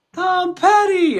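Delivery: very high, sobbing, bawling wail. Retelling a mother's answer while she was crying: imitating someone bawling. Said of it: "she was just bawling".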